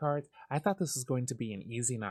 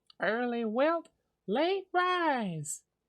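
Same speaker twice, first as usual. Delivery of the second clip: put-on high, loud southern accent with a drawn-out rising pitch; 11 semitones higher, 5 dB louder than usual. Voicing the character Luna during a game round, in Luna's southern accent. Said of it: "Luna suddenly has a southern accent".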